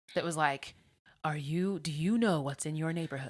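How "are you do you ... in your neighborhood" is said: public service announcer voice. Imitating a TV public service announcement: TV PSA announcer voice. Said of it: "the announcement voice you would hear when, like, a P S A would come on T V".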